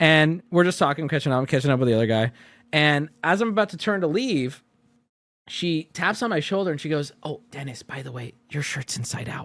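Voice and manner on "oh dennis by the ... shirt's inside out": very quiet, hushed, confiding tone. Retelling how a store employee pointed out his shirt: imitating a quiet remark. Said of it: "she says it very quietly".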